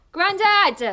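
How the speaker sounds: calling out at full shout. Calling for Grandad after bringing him riser fruit: shouting. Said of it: "No need to shout".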